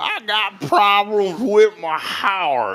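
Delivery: very high, very slow, drawn-out drawl. Retelling what a great-uncle always said: Uncle Bill drawl impression. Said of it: "'cause that's how he talked".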